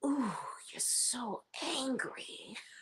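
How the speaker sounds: very quiet, slow, breathy put-on near whisper. Retelling teasing Martell about being angry: Lisa Rinna voice. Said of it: "In my Lisa Rinna voice".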